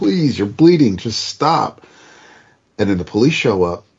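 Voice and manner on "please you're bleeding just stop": high-pitched, pleading, begging cry. Retelling a woman begging a bleeding man to stop, mock begging. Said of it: "begging him".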